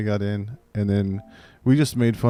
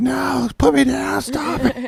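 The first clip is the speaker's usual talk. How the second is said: put-on very high, slow, drawn-out child's shriek. Retelling a kid losing a wrestling game: imitating a kid screaming. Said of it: "the kid is screaming".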